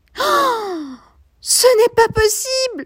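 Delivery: sharp, sudden, very high little cry. Reading a character who suddenly cries out: exclaiming with a little cry.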